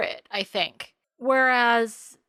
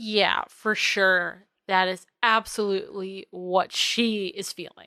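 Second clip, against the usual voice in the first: normal talking voice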